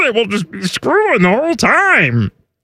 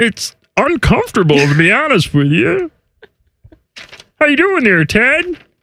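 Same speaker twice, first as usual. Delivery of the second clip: effortful, squeezed-out, strained frog puppet voice. Greeting Ted while keeping up the hard-to-hold voice, Kermit the Frog voice.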